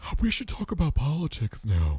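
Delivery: high, odd, peculiar, strange-sounding woman's voice. Speaker recalls a woman who had a very strange voice, imitating her strange voice. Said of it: "she had a very strange voice".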